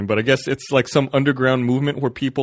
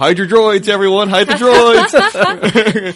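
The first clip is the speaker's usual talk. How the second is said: mock yelling, higher and louder; 9 semitones higher, 7 dB louder than usual. Retelling how booth guys yelled at a passing cosplayer: imitating people yelling.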